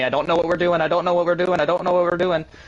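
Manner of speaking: high, loud screaming, repeated over and over. Retelling a race finish where another driver screamed: imitating Wessel screaming. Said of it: "he's screaming at me".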